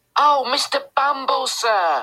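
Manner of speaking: very high-pitched crying out. Noah goes to fetch mr. bumble and cries out to him. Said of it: "cried Noah".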